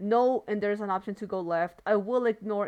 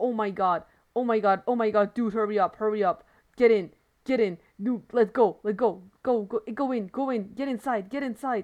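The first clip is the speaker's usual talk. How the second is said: put-on panic, rushed; 3 dB louder than usual. Commentating a game, reenacting own panic. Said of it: "I start panicking. I start going like".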